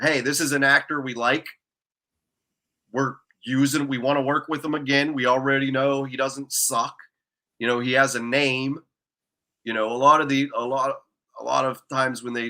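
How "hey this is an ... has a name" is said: ordinary talk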